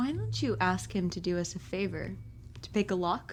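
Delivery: hushed, very quiet, barely audible whisper. Player at the table talks into the mic, whispering to the group. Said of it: "I am whispering to his meaning".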